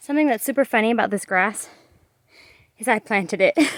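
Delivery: winded, breathless speech. Showing the duck pen they built, out of breath. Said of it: "I'm out of breath".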